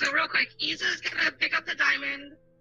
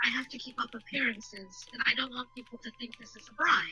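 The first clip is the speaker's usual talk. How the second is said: whispering really quietly, much quieter; 5 dB quieter than usual. A woman refusing a gift so only those nearest can hear; whispering really quietly. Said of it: "She whispers really quietly".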